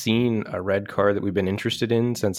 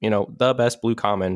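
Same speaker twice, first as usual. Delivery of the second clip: usual speaking voice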